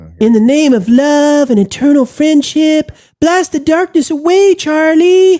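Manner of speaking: very high storybook unicorn character voice. Reading a viewer message in the Candy Mountain unicorn voice. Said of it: "we're switching the unicorn voice then".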